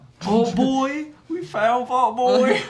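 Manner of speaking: put-on very high, very slow, weird yokel country accent. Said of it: "my weird countryman accent".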